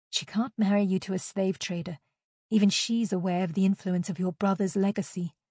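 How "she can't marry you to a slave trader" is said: ordinary delivery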